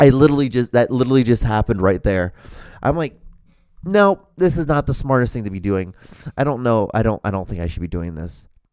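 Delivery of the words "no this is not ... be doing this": ordinary talk, nothing marked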